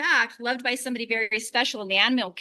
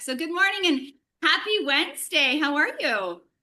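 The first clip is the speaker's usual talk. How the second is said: projected voice thrown out to carry far; 4 semitones higher than usual. Outdoors over street traffic, a host greets the audience: really loud, projecting. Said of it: "I'm gonna be really loud because we're outside".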